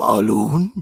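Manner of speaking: street vendor's sales pitch call. Watching a film and copying the balloon salesman's call: imitating the balloon salesman's voice. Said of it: "Listen to his voice, though".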